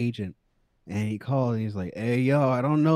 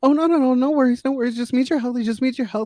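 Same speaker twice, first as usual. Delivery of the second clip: mock timid, very high-pitched, soothing, nervous reassuring tone; 14 semitones higher, 6 dB louder than usual. Retelling how a lady kept reassuring them while they bled, imitating a nervous, timid voice. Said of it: "in this very nervous, like timid voice".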